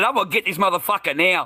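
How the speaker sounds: acted yelling. Retelling a confrontation, repeating his own threat: imitating his own yell. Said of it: "I yelled it".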